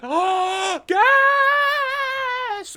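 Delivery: shrieking panicked scream, very high and loud. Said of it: "And they all start panicking".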